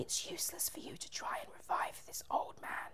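sinister, very hushed, evil whispered witch voice. Narrator reading a story voices the witch in his ear: evil witch whisper. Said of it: "I was trying an evil whisper".

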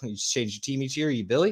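ordinary talk

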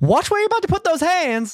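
very high voice, thrown across a distance. The game master warns a guard who starts reaching, in Salome's voice. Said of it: "I will ventriloquize Salome's voice to say".

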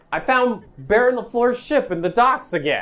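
very loud voice. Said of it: "'cause you're very loud".

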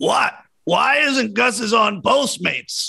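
very high, indignant, drawn-out screaming. Retelling a coach at a fried chicken place: imitating Doc Rivers screaming. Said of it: "Screaming, screaming at the employees".

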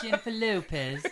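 laughing, mock Jamaican accent.

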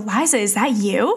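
put-on thick French accent. Retelling a friend calling out from behind in a cafe: thick French accent. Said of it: "in like a thick French accent go".

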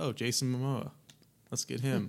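ordinary delivery

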